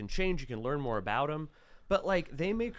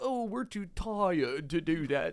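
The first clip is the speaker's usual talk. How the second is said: slow, drawn-out put-on British accent. Imitating the british couple refusing a task: put-on british accent. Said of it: "That's my British accent".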